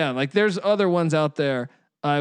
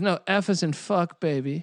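mimicked slightly effeminate-sounding voice; 3 dB quieter than usual. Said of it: "he says it all completely in that slightly homosexual voice of his".

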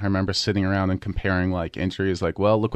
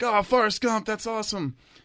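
imitated slightly drunk voice, higher; 14 semitones higher than usual. Retelling what a man at a bar said: imitating a tipsy guy. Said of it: "he's a little toasted".

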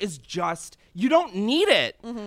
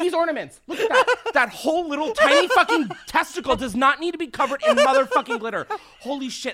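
high-pitched, fed-up, furious rant coming apart; 8 semitones higher than usual. Complaining about ornaments covered in glitter: unraveling with anger. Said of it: "actually becoming unraveled right now".

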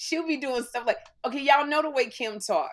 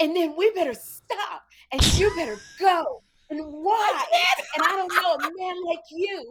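affected, showy, fancy put-on theatre voice; 6 semitones higher, 4 dB louder than usual. Imitating a friend presenting an award, fancy stage voice. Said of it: "You wasn't talking like this".

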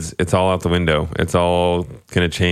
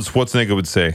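ordinary delivery

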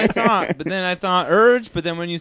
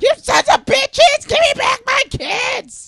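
mock screaming, higher; 4 dB louder than usual. Posing a riddle about a figure screaming, acting out screaming. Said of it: "screaming at the top of their lungs".

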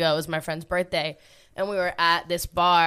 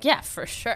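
half-joking, acted sarcastic, joking delivery; 5 semitones higher than usual. Retelling own reply to being asked about DJing: imitating own sarcastic reply. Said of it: "being sarcastic".

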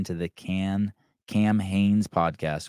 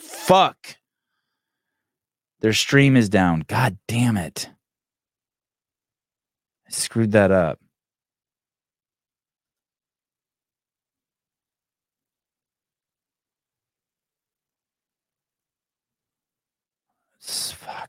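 loud, angry, frustrated outburst; 2 semitones higher, 5 dB louder than usual. Speaker on a broadcast, already pissed, finds a stream is down: angry. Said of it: "I'm kind of pissed right now".

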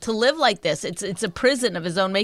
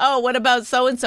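normal talking voice

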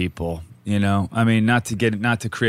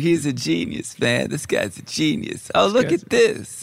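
spaced-out, slow, pitched-up, every word dragged out; 8 semitones higher than usual. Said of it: "You were like Bill Clinton".

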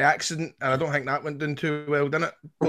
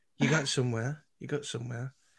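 put-on Manchester accent on every word; 7 dB quieter than usual. Retelling stopping a man on the stairs, quoting oneself in a Manchester accent. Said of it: "that was Manchester accent".

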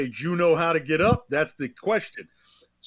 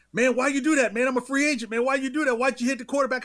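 mock high, screaming, protesting tone; 9 semitones higher than usual. Acting out a man's reaction to a hit on the quarterback out of bounds, imitating someone screaming. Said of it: "he's screaming".

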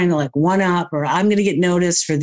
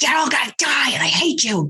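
acted wild, furious, high, swooping ranting scream; 6 semitones higher than usual. Describing a person at an intersection screaming at everyone: imitating someone screaming. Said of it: "just screaming like".

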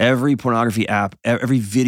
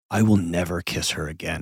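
soft, goofy, silly half-whispered delivery; 5 semitones lower, 5 dB quieter than usual. Retelling half-whispering a joke line to a daughter: retelling a half-whisper. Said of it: "And I whispered to my daughter".

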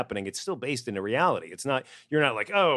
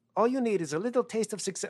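bad put-on French accent, higher; 12 semitones higher than usual. Quoting Monique's line from a film: bad French accent as Monique. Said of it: "My French accent is horrible".

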